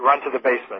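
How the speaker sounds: usual speaking voice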